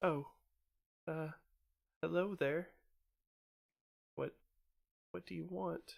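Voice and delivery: thin, wavering, quavering, very high voice. Voicing a huddled figure greeting players: thin wavering male voice. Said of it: "a thin, kind of wavering male voice that just says".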